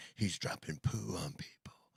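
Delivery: slow, totally serious, breathy delivery. Imitating Whoopi describing a fighter jet video: Whoopi Goldberg impression, serious. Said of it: "she said it with a serious face".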